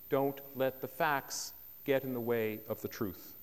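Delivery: ordinary delivery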